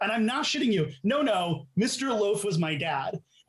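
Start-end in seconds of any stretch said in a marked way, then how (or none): 1.0-3.2 slow, earnest, dead-serious, sincere tone. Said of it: "he says it with that sincerity".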